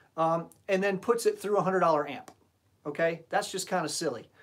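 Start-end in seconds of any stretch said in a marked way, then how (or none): none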